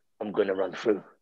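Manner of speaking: low, deep, hushed superhero voice. Retelling what she said while putting on a Batman voice. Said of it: "She put on the Batman voice and said".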